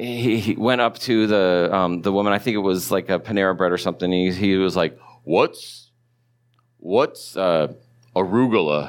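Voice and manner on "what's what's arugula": put-on deep baritone voice, lower pitch. Retelling a pastor ordering food at an airport: deep baritone voice imitating Ken Graves. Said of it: "really deep baritone voice".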